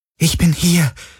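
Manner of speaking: softly whispered. Hurrying to a man at a control desk, a woman speaks to him, whispering. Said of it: "flüsterte sie".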